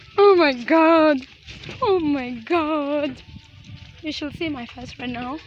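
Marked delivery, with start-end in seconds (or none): 0.2-3.2 very loud, very slow, drawn-out frightened outcry. Talking to viewers during a frightening first experience, scared. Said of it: "I am literally so scared right now".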